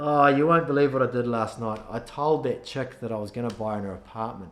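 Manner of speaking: matter-of-fact, offhand, with no excitement at all. Retelling what a guy told the speaker the next day: imitating an unexcited tone. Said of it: "I'll tell you exactly how he said it".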